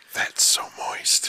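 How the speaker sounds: whispering creepily. Reading out creepy sentences after being told to whisper: whispering creepily. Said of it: "you gotta whisper".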